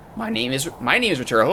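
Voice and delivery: voice cracks, low and soft. Host signing off an episode, stating the name: voice cracking. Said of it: "voice crack there".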